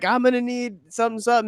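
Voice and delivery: loud, high-pitched, hollering yell. Retelling a commercial where the dad yells to his wife: imitating someone yelling. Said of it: "yelling to his wife".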